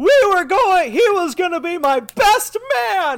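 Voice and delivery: very high shriek at full voice. During a combo attack, the game narrator voices the pollicle with the bat, screaming. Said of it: "the pollicle with the bat screams".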